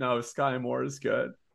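put-on beleaguered voice. Recreating a remark they made earlier: retelling in a beleaguered voice. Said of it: "I said that in the most like beleaguered voice".

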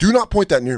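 mock dead-serious tone, very high and loud. Retelling telling a man to stop pointing a gun, retelling his serious voice. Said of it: "You get serious voice".

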